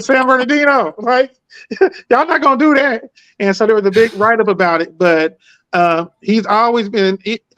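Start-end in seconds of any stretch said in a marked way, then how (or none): 0.0-3.0 high, defiant scream. Retelling screaming out when the MVP name was called: retelling a scream. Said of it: "So then I just started screaming".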